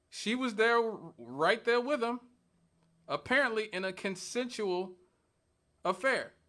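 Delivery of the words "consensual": consensual stressed hard. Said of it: "Emphasis on the word consensual".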